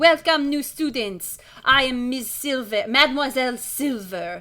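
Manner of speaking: put-on with a French accent. Voicing the teacher as she welcomes new students: Mademoiselle Silver's French accent. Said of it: "She's French as well".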